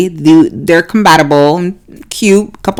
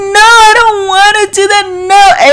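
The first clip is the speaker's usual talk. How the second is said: put-on crying voice, higher pitch. Retelling how Amaya reacted beside her partner: imitating Amaya crying.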